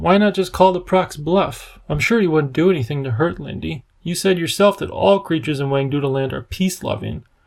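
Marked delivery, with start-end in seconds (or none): none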